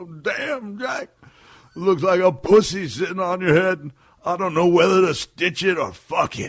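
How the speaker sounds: booming, shrill, very loud high voice. Retelling what Robert said about a head wound, imitating Robert Bullet. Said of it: "I don't do Robert Bullet justice".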